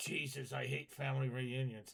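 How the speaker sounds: put-on devil character voice. Voicing the devil in a magnified picture: voicing the devil in a picture. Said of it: "look at the devil. He's just like".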